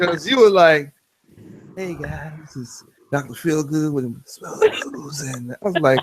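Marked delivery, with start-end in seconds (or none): 1.8-5.2 mock low sensual voice, quieter. Imitating another speaker's early video intro: imitating someone talking low and sensual. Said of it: "when you talking so low and, s-, and try so sensual".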